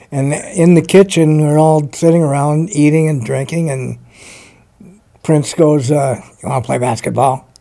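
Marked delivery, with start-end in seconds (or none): 6.4-7.3 low-voiced, easy, relaxed tone. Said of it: "talked in a low voice".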